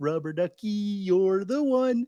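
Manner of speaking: cartoonish puppet voice. Doing Muppet impressions, naming each first: Ernie from Sesame Street voice. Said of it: "Ernie from Sesame Street".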